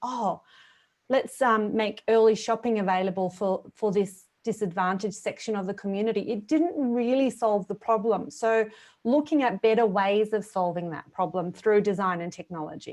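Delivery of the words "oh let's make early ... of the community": usual speaking voice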